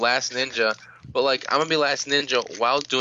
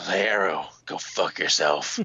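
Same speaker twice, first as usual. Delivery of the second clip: very low, deep, gruff, growly superhero voice; 7 semitones lower than usual. Saying a line to Arrow in a gruff Batman voice. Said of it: "in a gruff Batman voice. Oh, gruff Batman".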